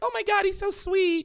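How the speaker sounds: very high, slow, sweet put-on girl voice. Acting out a woman swooning over a romantic gesture from her man, put-on girl voice. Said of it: "I can't believe I have my girl voice back".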